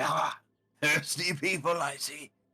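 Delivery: slow, chuckling, laughing through the words. Voicing a bartender amused by thirsty newcomers: chuckling while speaking. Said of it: "he sort of chuckles at it".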